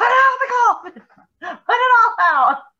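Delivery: high screaming, acted out. Speaker recounts him screaming at the speaker in the yard, retelling someone screaming. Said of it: "he's like screaming at me in the yard".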